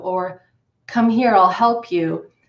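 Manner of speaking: very calm, speaking calmly. Speaker demonstrating prosody as an example, very calm voice. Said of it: "be very calm or very stern".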